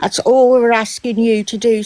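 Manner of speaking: shaky, trembling, quivering voice. Addressing Andrea about her crime as one of the children, in a shaky voice. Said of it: "my voice is shaky".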